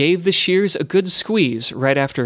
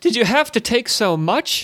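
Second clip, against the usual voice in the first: high, crying-out, protesting exclamation; 8 semitones higher than usual. Ivretto, holding his fresh ear wound, cries out to Larence: crying out. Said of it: "he cried".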